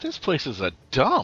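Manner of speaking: a little too loud. A traveler in a role-play, greeted at the Fighters Guild, speaks a little too loud. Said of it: "I say a little louder than I mean to".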